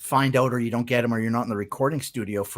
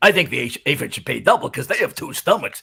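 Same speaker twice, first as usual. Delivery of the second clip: loud, gross little germ voice; 2 semitones higher, 5 dB louder than usual. Voice actor recalling his audition for a germ character; gross germ character voice. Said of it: "gross germ of a character".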